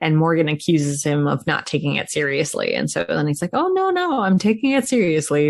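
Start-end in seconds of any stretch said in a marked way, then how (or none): 3.5-5.5 high, thickly sarcastic tone. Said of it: "very, uh, sarcastically".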